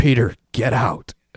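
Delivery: loud, altered, guttural demonic scream. Narrating the story, a young woman screams at her boyfriend: altered guttural scream. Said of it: "in an altered, guttural voice, Anneliese screamed".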